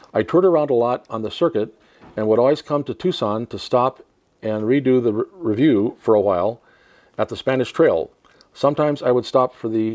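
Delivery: ordinary talk, nothing marked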